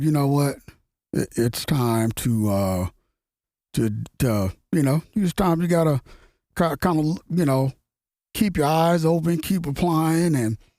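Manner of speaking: plain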